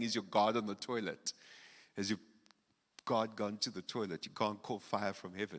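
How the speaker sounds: ordinary talk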